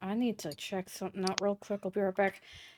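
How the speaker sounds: whispering. A character at the inn telling everyone before heading to the back door, whispering. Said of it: "I'm going to whisper to everyone".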